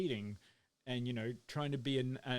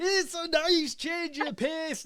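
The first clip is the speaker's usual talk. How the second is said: put-on very high, loud Irish Northern Welsh accent; 10 dB louder than usual. Speaker showing how to read an absent person's notes, Quinny's Irish Northern Welsh accent. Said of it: "You try the the Irish Northern Welsh accent".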